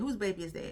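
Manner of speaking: plain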